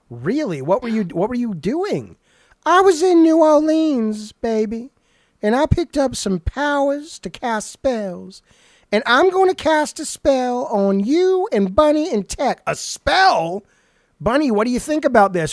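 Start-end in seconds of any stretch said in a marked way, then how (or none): 2.6-12.6 heavy sass, high-pitched and slow. Voicing Miss Sassy bragging about picking up spell powers: Miss Sassy character voice. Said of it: "call out our good friend, Miss Sassy".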